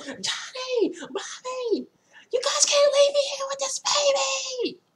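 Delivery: very high, long, drawn-out holler. Retelling how a mother yelled after her running toddlers: imitating a mother yelling. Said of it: "she's yelling".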